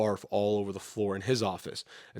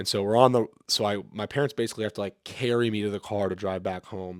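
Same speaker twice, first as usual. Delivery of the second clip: plain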